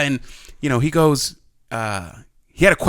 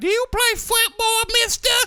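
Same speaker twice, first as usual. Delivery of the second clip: put-on very high, small little-kid voice. Retelling a little kid at the rec center asking him a question, imitating a little kid. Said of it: "That's that's that's how it sounded".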